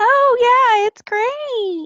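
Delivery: mocking, fake cheerful voice, chirped up high.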